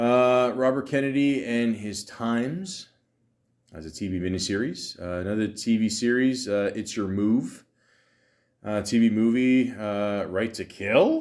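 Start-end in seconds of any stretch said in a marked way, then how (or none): 10.3-11.2 rising tone, upward lift at the end on "kill". Reading out a list of TV titles, rising question on Kill. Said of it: "I said it like that because I had a question mark at the end".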